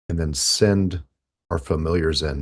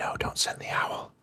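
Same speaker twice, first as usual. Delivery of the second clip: hushed, slow, very soft whisper, barely voiced. Joking that someone who can't hear the others is whispering to them: mock whisper. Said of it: "Maybe she's just whispering to me".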